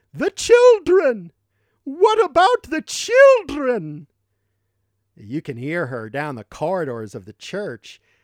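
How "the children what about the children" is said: very loud, very high, swooping, drawn-out booming bellow. Recalling a church woman confronting anyone who disagreed, retelling a loud persuasive bellow. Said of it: "She used to bellow in this loud and persuasive voice".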